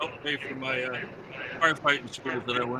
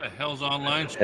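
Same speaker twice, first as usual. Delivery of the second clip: ordinary talk, nothing marked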